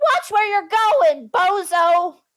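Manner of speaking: shrill car voice, very high, drawn-out yell. Voicing a car yelling at a jaywalker: Timmy the car yelling. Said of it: "Timmy yells out".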